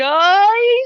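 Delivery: very high, very loud, quavering, drawn-out yell. A game master voices a character managing to call out, slightly wavering yell. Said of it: "in a slightly wavering voice, he he manages to yell out".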